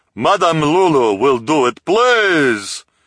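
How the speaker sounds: big, loud, booming, proclaiming voice. Reading a story aloud, a narrator voices a character's announcement in a booming voice. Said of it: "announced in a booming voice".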